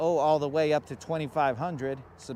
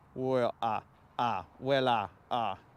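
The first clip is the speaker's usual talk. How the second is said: stuttering classic-cartoon rooster impression; 3 semitones lower than usual. Speaker reaches into classic cartoons for a Foghorn Leghorn impression. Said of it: "talk to Foghorn Leghorn".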